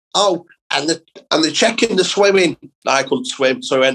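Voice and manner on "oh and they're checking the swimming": high, squeaky, angry little voice. Retelling how he drilled it into you to behave for Ofsted, squeaky Joe Pasquale voice, angry little man. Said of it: "angry little man with a squeaky voice".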